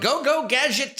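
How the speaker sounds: very high cartoon voice, pushed way up. Answering a request to do the voices: Inspector Gadget voice. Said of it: "if you can do the voices too".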